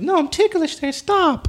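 put-on squeaky, very high girl voice. Retelling what a woman said when he grabbed her, in a squeaky high girl impression. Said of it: "why did it sound like Mickey Mouse?".

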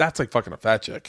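plain

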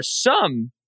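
big voice crack mid-phrase. A speaker discussing football receivers, with a big voice crack. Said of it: "that was a big voice crack on that one".

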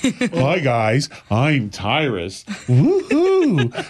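put-on condescending voice. Retelling how the girls imitated him: imitating a condescending voice. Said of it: "In a condescending manner".

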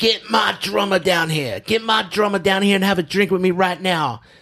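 put-on high, boozy, drunken screaming. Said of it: "Mick's screaming and yelling".

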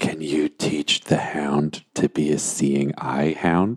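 very slow, hushed half-whisper. Calling Goblin Junior over in character and asking him something: half-whispering. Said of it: "and then I whisper to him".

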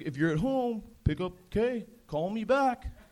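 fatherly dad-like voice. Retelling how the dad leaves voicemails: imitating his dad's voicemail. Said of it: "He's like".

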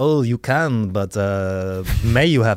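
put-on French accent. Playing the other speaker's mom correcting grammar: put-on french accent. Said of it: "I don't know why I made a French".

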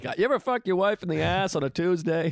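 stand-up comic punchline delivery. Retelling a line from own stand-up act: imitating own stand-up delivery. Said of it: "I'm up there being like".

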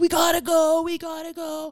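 very high, stretched, drawn-out hollering. Speaker retells yelling at him from the truck while driving, retelling yelling at him. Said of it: "I'm literally yelling at him like".

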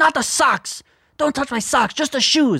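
put-on fussing old woman yell, pitched very high. A grandson retells his grandma yelling at him as he removes her shoes, imitating grandma yelling. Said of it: "she starts yelling at me".

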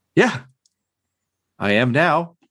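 chipper, bright, sunny tone. Answering in character after firing the gun: smiling brightly. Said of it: "smile very brightly".

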